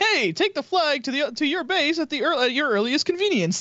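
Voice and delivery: friendly, polite synthetic assistant voice. Voicing a game ai telling a player to take the flag: friendly ai voice. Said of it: "kind of friendly".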